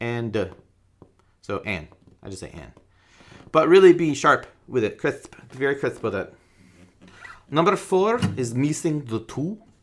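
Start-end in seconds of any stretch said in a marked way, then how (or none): 7.5-9.6 put-on Russian accent, pitched up. Explaining a counting exercise, a line delivered in Russian accent. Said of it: "That is a Russian accent".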